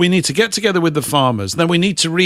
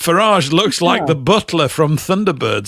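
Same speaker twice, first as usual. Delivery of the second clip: plain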